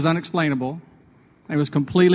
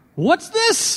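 put-on thick high-pitched British accent. Retell how the pastor beside you held up the ball, in [name]'s biggest British accent. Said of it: "said in his biggest British accent".

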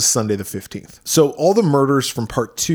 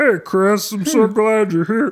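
very high voice, talking through a bubble of milk; 9 semitones higher than usual. Recapping a show and mocking an actor's bad acting, doing Rick's milk-bubble voice. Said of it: "He talks like he's got a milk bubble".

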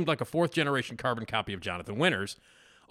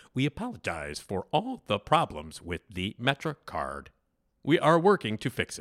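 automated-sounding robot voice. Imitating a transit app's recorded apology for a co-host: robot voice. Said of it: "it's like Robbie the robot".

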